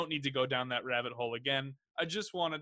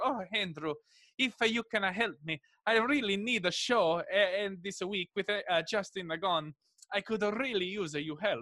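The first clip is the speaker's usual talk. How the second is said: put-on wilting elderly Italian man voice, higher; 6 semitones higher than usual. Retelling asking the listener for help with a show, in a wilting elderly Italian man's voice. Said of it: "I had like a wilting, elderly Italian man's voice".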